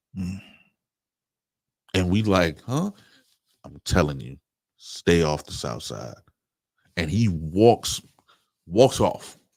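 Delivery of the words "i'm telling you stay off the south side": low, cautious, dropped voice. Retelling to a friend how a man warned them, retelling a lowered-voice warning. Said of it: "lowers his voice".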